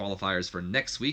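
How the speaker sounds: ordinary talk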